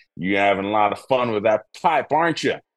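put-on Southern accent, put on. Quoting a Savannah local who watched him smoking, in a Southern accent. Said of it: "he had this Southern accent".

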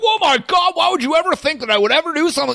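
acted-out, very high, exploding angry outburst. Describing someone caught in a lie, act out their reaction: acting out an angry outburst. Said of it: "they're the person that's going to blow up about it".

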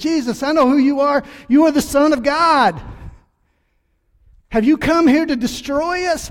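wild, loud, high screaming holler. Retelling a bible verse, acting out a wild man screaming at jesus. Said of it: "starts screaming and hollering and saying".

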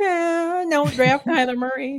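very high, slow, sneering, mocking put-on voice. Asked to redo his impression, the speaker does his mock hater voice. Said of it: "like the hater right. Voice".

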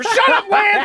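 shrill, very high screaming. Retelling how a manager answered a reporter's question: imitating someone screaming. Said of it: "He's just screaming at Lance Hornby".

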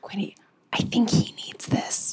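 hushed, breathy whisper. In a roleplay scene, speaking in character to quinny, whispering. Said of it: "And I just whisper".

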